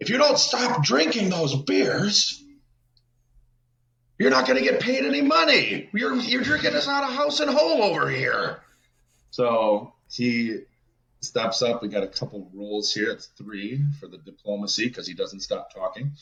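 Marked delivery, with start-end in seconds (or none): 0.0-8.6 very high-pitched, loud yelled shout. Voicing a character who yells at a drinker in the corner: yelling in character. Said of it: "Charles yells out".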